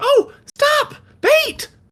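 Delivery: bright, peppy voice pitched way up high. Game master voicing Ladybug calling out as the players walk toward the inn. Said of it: "you hear a, a bright, peppy voice".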